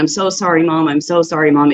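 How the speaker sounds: put-on crying, pleading voice. Retelling a son's apology on the phone: imitating someone crying. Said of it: "he would call me just crying".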